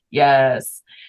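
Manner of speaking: put-on dry sarcastic tone. Retelling a stepdad's answer to a question: imitating Barrett's dry sarcastic yes. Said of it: "dry, sarcastic sense of humor, and just went".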